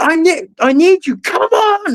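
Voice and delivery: very high, drawn-out screamed call. Recounting a protest, speaker acts out a man who kept screaming: retelling a scream. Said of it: "he kept screaming like".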